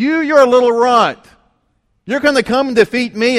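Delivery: high, loud, mocking, taunting yell.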